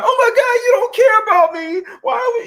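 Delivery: very high-pitched, weepy, tearful crying voice. Imitating a woman who starts crying at the man: imitating someone crying. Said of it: "she's gonna start crying".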